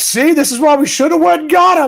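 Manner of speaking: loud, high-pitched shouting.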